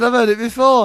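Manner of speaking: talking through laughter. Explaining why they are laughing at their own joke: laughing while talking. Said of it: "I'm laughing".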